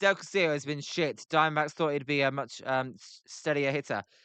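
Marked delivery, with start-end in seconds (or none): none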